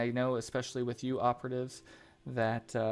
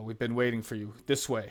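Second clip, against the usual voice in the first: gruff character voice, faster. A game narrator voices Davos greeting the players, gruff Davos voice. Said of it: "he's kind of gruff".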